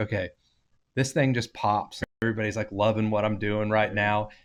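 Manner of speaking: ordinary talk, nothing marked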